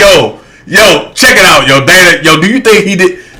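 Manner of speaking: low street-guy voice. Retelling how friends from the city asked about the case: imitating homeboys asking. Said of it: "I done had my homeboys like".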